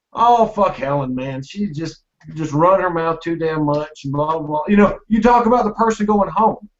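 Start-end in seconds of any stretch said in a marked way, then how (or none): none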